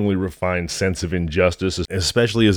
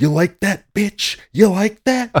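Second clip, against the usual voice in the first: hostile, taunting, higher aggressive turkey voice; 13 semitones higher, 4 dB louder than usual. Describing a turkey standing on the speaker's chest: turkey impression. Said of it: "That's a great turkey impression".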